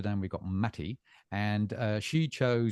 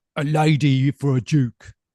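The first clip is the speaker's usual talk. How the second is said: put-on London accent, very loud and very drawn out; 5 semitones higher, 13 dB louder than usual. Interjecting in a chat to say a line in a London accent. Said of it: "I have to say this in a London accent".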